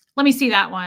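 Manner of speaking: curt, rude, demanding tone. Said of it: "just demanding".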